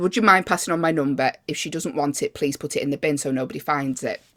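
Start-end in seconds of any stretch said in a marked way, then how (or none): none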